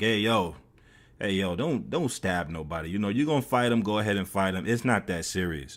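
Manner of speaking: plain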